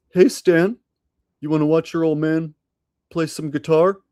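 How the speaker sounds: put-on cartoon dad voice. Channeling a South Park dad speaking to Stan: Randy Marsh voice. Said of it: "see if I can channel some Randy Marsh".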